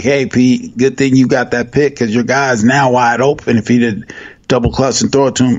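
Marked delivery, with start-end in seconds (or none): none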